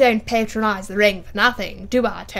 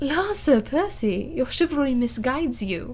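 coy, teasing, coquettish, flirtatious tone; 4 semitones higher than usual. Marguerite answers her husband, Sir Percy, speaking coquettishly. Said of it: "said Marguerite coquettishly".

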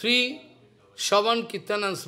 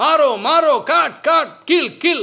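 put-on demonic shout, higher and louder; 7 semitones higher, 10 dB louder than usual. Retelling how the Asura servants shout while chasing Prahlad: imitating the demons shouting. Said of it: "This kind of shouting".

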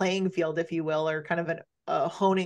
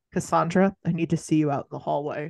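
ordinary delivery

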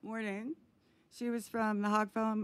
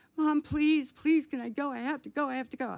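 high, loud, repeated, acted-out begging plea; 5 semitones higher, 6 dB louder than usual. Retelling begging her mom to let her go to Woodstock; retelling begging. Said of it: "I begged her".

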